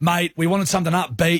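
ordinary talk, nothing marked

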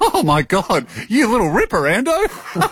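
high-pitched, delighted, laughing voice.

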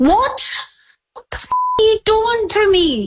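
very high, swooping, furious, angry disbelief. Reacting to her daughter's news about a Lego purchase: angry at her daughter. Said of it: "you're making me so f-, angry".

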